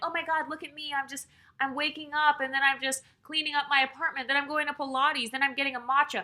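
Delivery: showy look-at-me voice. Mocking women who perform a soft life online: imitating performative women. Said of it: "they're doing this performative thing where they're like".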